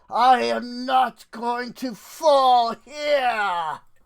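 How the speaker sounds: defiant, high, drawn-out villain voice shout. Game master voices a villain swinging his great sword, with a villain shout. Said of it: "whole villain thing where he shouts".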